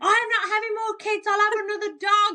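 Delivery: mock high, shrieked, yelled screaming outburst. Retelling what was screamed while giving birth: imitating own past screaming. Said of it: "I remember screaming".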